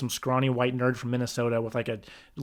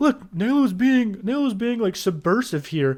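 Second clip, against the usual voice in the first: high, mocking put-on impression voice. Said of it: "Jesus is like".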